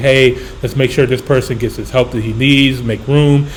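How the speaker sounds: normal talking voice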